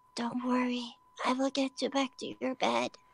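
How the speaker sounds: gentle, soft, hushed whisper. Reassuring a companion who has fallen asleep on your back: whispering. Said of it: "I whisper to her".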